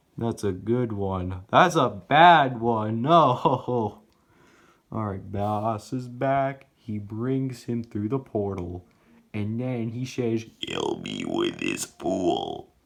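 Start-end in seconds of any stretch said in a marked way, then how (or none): 10.6-12.6 very deep, rough, creaky, weird put-on voice. Telling a game story, the speaker voices what he says in a weird character voice. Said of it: "I'm trying to make weird voices".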